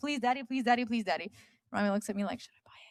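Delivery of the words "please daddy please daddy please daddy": put-on repeated pleading, begging little-girl voice. Father retells his daughter begging for a Minnie Mouse ship; imitating child begging. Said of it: "she just like had a meltdown".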